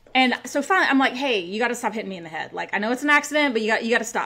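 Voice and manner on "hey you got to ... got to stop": usual speaking voice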